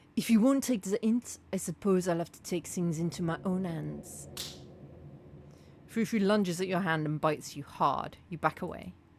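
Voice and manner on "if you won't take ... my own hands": put-on French-accented character voice. In a role-play scene, Frou Frou warns the player in Frou Frou's French accent. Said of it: "I apologise for my French accent".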